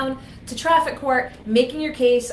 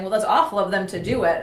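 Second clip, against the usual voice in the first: ordinary delivery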